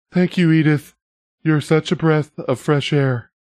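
meek, timid, small, high-pitched voice. Retelling what a man in a clip said: imitating a timid voice. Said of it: "in the most timid voice".

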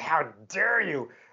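affronted, angry, indignant, outraged tone. Recalling being told they might not be able to go, retelling being mad. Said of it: "I'm so mad".

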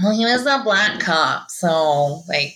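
low, slow, mocking clueless voice.

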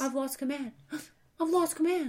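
put-on high, small, childlike cowering voice. Imitating an actor playing a captain who becomes childlike: imitating Shatner's childlike Kirk. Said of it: "He goes".

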